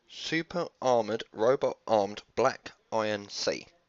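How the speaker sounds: deliberately drawn-out words. Reading out a long card name from a pack: said slowly on purpose. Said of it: "I said that slowly on purpose".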